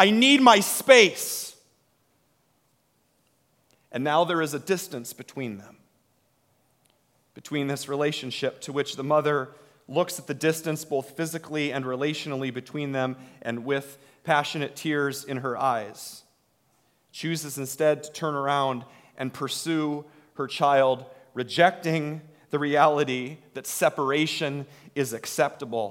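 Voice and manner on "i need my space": high, loud rebellious yell. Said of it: "and yells".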